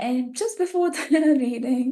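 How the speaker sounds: laughing.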